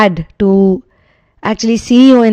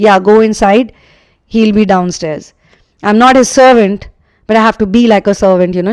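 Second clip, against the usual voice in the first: ordinary talk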